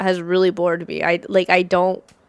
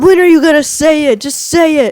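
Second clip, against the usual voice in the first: put-on wrestler yelling, higher and louder; 8 semitones higher, 8 dB louder than usual. Retelling backstage segments where he yells at Sami: imitating Karrion Kross yelling. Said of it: "He's just yelling at Sami".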